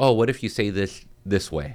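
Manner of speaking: plain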